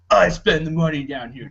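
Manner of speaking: ordinary delivery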